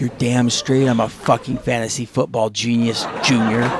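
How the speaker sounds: secretive, hushed half-whisper with no voice. Speaker recounting his mother bending over to speak into his ear: retelling mother's half-whisper. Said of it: "she whispers into my ear".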